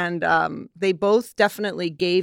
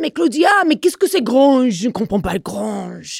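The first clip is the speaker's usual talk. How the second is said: put-on convincing, loud, pitched-up French accent; 5 semitones higher, 6 dB louder than usual. Retelling what Serge said when she walked into the studio, imitating Serge's French accent. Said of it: "a very good French accent".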